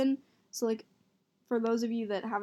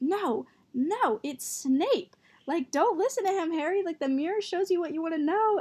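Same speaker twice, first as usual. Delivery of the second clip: higher-pitched yelling; 7 semitones higher, 4 dB louder than usual. Retelling how Kelly yelled at the TV during the movie: imitating Kelly yelling. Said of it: "Kelly is yelling at the T V".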